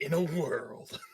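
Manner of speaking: dramatic film narrator delivery. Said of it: "that's what it's gonna be like".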